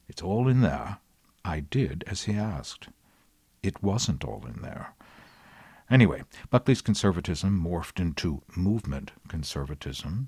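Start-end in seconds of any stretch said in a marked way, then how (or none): 0.2-1.0 put-on faux British accent. Retelling William F. Buckley's answer to a question: William F. Buckley's faux British accent. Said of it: "he said in his faux British accent".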